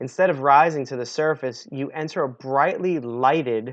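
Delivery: ordinary delivery, nothing marked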